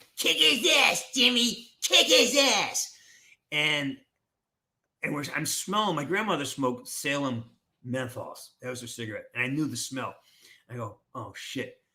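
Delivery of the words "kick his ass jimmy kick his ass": shrill angry little shout, very high and loud. Retelling his grandmother shouting through the mesh during a hockey fight, imitating an angry little voice. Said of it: "this angry little voice".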